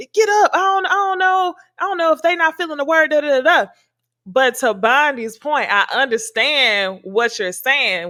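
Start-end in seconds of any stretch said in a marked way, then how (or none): 0.1-3.7 loud holler, higher pitch. Retelling the pastor urging people to stand: imitating the pastor hollering. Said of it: "So he hollering".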